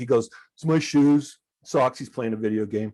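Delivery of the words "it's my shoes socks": put-on sarcastic tone in a slow drawl. Retelling a teenage son's answer about his shoes, imitating a sarcastic reply. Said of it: "and then he gets sarcastic with me".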